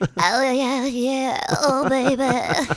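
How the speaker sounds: very slow, drawn-out pop-star voice, every word stretched. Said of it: "how's she sound?".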